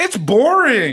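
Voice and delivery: loud, high-pitched, shrill character voice. The speaker pictures Paul on vacation in Cairo and does a Paul impression. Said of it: "my impression of Paul".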